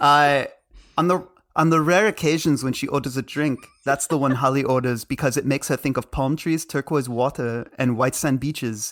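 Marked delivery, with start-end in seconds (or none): 1.0-8.9 put-on Austrian accent. Reading a passage aloud before talking about it, in Arnold voice with Austrian accent. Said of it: "I'm going to read it in Arnold voice".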